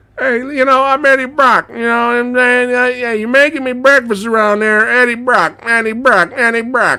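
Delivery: very high voice with rambling, tumbling words. Retelling a movie argument scene: Tom Hardy impression. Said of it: "the authentic Tom Hardy re-, impression right there".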